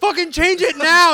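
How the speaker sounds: shrill, all-out scream, very high and very loud. Retelling how they screamed to change the TV show: imitating own screaming. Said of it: "I started screaming".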